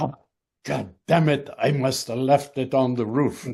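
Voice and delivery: put-on French accent. Retelling what he said when he looked for his coffee, French accent. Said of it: "in his French accent".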